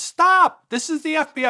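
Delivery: very high, weak shout. Recalling a first arrest, repeating the words in an unconvincing, uncommanding voice. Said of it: "My voice was, nobody was going to stop".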